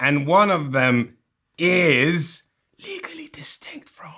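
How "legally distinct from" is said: hushed whispered aside. Presenting cards from a game deck, dropping into a whispered aside.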